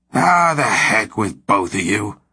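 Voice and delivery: slow, fed-up, disgusted. Blackmore answers the girl and her husband after her news, in disgust. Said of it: "Blackmore said in disgust".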